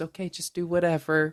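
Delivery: mock indifferent voice. Retelling how Jason sits back and answers: imitating Jason's indifferent reply. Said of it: "he sits back and just goes".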